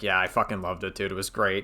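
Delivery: mock-enthusiastic, acted sarcastic tone. Retelling a call where Evil Shrimp asked about his video: retelling a sarcastic reply. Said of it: "I sarcastically was like".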